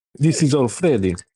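put-on, fake Italian accent. Joking about a ballplayer's name: put-on italian accent. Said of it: "I just made him sound Italian".

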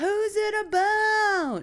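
put-on high, slow, drunken yelling voice.

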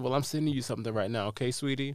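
normal talking voice

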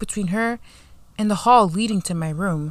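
plain

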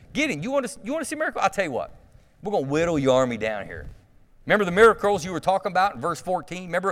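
mocking sarcastic tone. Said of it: "I'd be so sarcastic".

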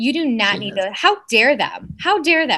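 sassy attitude. Addressing listeners about people taking advantage of them, sassy. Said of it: "I'm sassy right now".

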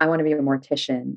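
normal talking voice

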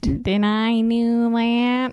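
very slow, drawn-out character voice, every word dragged. Doing a sitcom catchphrase for another speaker: Steve Urkel impression. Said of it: "That's actually a pretty good impression".

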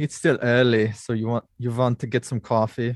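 bad, clumsy, horrible German accent. Greeting the others on a podcast in a horrible German accent. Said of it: "it was a horrible German accent".

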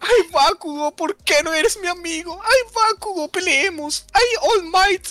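very high, weepy, slow, drawn-out crying. Imitating how a crying anime character speaks: mock crying as Deku. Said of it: "Llora en cada episodio".

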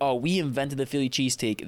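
ordinary delivery

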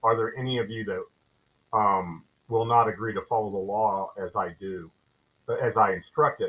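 plain

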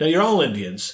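sarcastic, high-pitched, insistent. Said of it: "I'm just being sarcastic about it".

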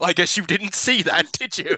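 put-on mocking villain voice. Retelling a film scene where Bison mocks Sagat, quoting Bison's mocking taunt. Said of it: "And Bison mocks him".

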